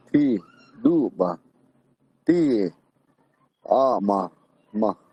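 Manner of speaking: very slow delivery, one word at a time. Showing a learner how to say the sentence slowly, word by word. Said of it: "Just say it word for word".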